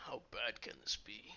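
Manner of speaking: whispered aside with a slight chuckle. Doran whispering aside to the group after Halgus speaks, slight chuckling whisper. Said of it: "slightly chuckle and whisper to you guys".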